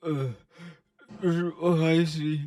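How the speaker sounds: imitated crying, tearful speech. Retelling a friend eating very hot wings on video: imitating someone crying. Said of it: "And he's fucking crying".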